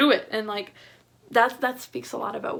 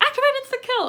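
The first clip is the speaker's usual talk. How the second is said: mock very high, loud, panicked voice; 6 dB louder than usual. Retelling a movie scene where he was panicking: imitating someone panicking. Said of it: "he was just, like, panicking".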